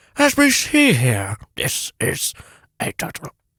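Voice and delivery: slow, calm wildlife documentary narrator voice. Doing a nature documentary impression for another speaker: David Attenborough impression. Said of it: "that's my best David Attenborough".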